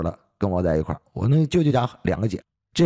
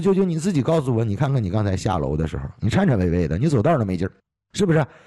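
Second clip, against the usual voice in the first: ordinary talk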